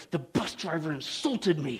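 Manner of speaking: very quiet, hushed, slow words through gritted teeth. Retelling a story, quoting an agitated woman on a bus: through clenched teeth. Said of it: "She said through clenched teeth".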